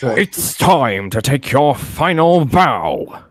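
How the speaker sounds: very slow put-on character voice, every word stretched out. Giving a character impression on a call, Funtime Foxy voice. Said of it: "I can actually do Funtime Foxy's voice if I may give an impression".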